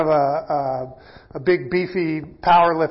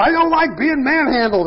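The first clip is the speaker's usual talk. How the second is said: very high, squeaky holler; 9 semitones higher, 3 dB louder than usual. Retelling how he yells whenever the speaker shakes him around, imitating someone yelling. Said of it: "And he yells".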